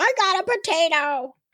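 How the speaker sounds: put-on high-pitched childlike little kid voice. Imagining kids finding a potato with their candy, in a kid voice. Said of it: "see how many kids like be like".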